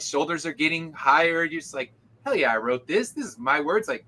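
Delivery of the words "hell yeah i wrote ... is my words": proud, beaming tone. Retelling own reaction at a con: imitating own proud boast. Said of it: "I'm all beaming with pride".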